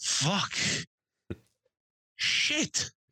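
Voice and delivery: grumbling, muttering under the breath to himself. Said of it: "said every curse word he knew".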